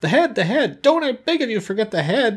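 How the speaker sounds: very high, excited outcry. Reading a story, the Wogglebug calls out while the powder is sprinkled: crying out excitedly. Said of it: "cried the Wogglebug excitedly".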